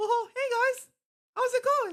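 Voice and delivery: very high, loud, squeaky cartoon mouse voice. Imitating Zuckerberg greeting everyone: Zuckerberg as Mickey Mouse voice. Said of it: "Zuckerberg just says Mickey Mouse in my brain".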